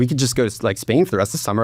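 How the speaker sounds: plain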